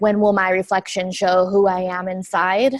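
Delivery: ordinary talk, nothing marked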